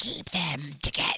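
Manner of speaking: hushed whisper under the breath. Retelling a scene where Daryl hears the Whisperers: Whisperers voice. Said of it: "That actually sounds exactly like it".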